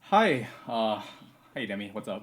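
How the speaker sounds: very quiet, hushed, worn-out, exhausted voice. A guest greets the host after joining a call, exhausted. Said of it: "You sound exhausted".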